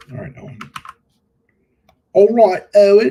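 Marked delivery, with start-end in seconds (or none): 2.1-3.1 very loud, high, put-on English accent. Saying a name aloud while editing, in a put-on English accent. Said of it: "It's my English accent".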